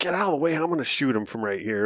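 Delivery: voiced half-whisper under the breath. Retelling what was said to a hunting partner during a stalk: retelling a half-whisper. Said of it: "I'm trying to whisper".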